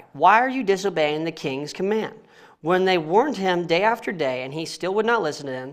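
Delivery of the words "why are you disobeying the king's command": plain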